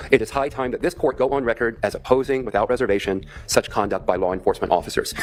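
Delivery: ordinary talk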